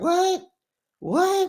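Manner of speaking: "what" said stunned, very high pitch.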